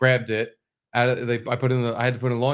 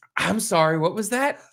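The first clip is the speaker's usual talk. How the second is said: put-on frazzled, exasperated voice, pitched up; 7 semitones higher than usual. Retelling how the waitress answered with her eyes clamped shut: imitating an exasperated waitress. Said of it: "she was losing it".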